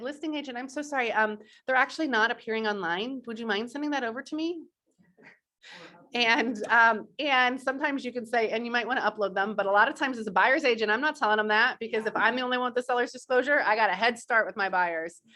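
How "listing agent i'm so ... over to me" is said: nicest, sweetest, extra-nice polite voice. Showing buyer's agents how to ask a listing agent, in your nicest voice. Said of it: "in your nicest voice to say".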